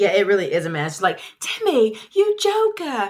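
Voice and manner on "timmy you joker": very high-pitched put-on British accent. Retelling what Zeta said to Timmy across the room, imitating Zeta's British accent. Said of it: "That was a good accent".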